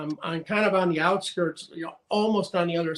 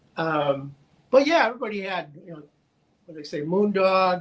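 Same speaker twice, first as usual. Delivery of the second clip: plain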